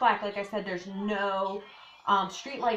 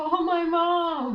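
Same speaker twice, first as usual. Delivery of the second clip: mock tearful, high, loud crying, one word drawn out; 8 semitones higher, 6 dB louder than usual. Recalling being pulled over, the speaker repeats a plea, retelling a crying plea. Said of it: "I'm like crying to Colette".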